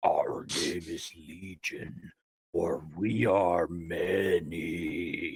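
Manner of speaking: very low, unearthly, gloppy swamp voice. Looking another character right in the face, speaking in a weird unearthly gloppy swamp voice. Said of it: "in my weird, unearthly, gloppy swamp voice".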